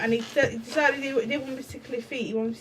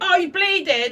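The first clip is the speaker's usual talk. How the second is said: shouting, higher and louder; 5 semitones higher, 6 dB louder than usual. Retelling what Kevin did when she got hurt: imitating Kevin shouting. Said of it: "he just shouts at you".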